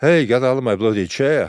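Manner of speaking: loud, sudden barked delivery. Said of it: "unmistakable [name] voice".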